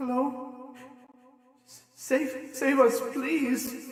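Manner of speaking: small, tinny, metallic-sounding voice. A voice from inside a vault calls out, small tinny voice. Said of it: "you hear a a small, tinny voice".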